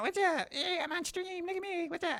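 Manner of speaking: put-on very high, bubbly, super happy stuffed-toy voice. Voicing a plushie on stream: super happy plushie voice. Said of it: "probably not the voice you're envisioning".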